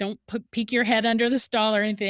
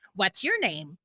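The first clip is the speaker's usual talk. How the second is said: mechanical toy-robot voice. Retelling what a kid who kept bothering the speaker said: robot voice. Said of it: "And then he goes in this robot voice".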